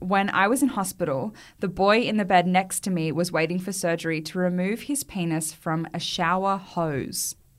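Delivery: ordinary delivery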